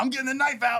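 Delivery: very high, heavily drunk-sounding voice, acted out. Retelling a night when Colin threatened everyone: imitating drunk Colin. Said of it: "he was super drunk".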